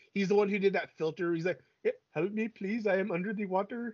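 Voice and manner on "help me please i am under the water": put-on, laid-on Indian English accent. Speaker quotes an older indian man's meme filter video, in a put-on indian accent. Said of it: "that accent didn't, like, grate on me".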